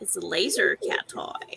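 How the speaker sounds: put-on Southern California Valley Girl voice. Insisting to doubting listeners that it's a cat toy, in a valley girl accent. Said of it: "Got a Valley Girl accent going on".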